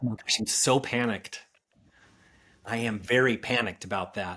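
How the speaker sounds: slow, dry, sarcastic drawl with feigned worry. Answering a question about whether adjustable rate mortgages are a concern: sarcastic. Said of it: "note my sarcasm".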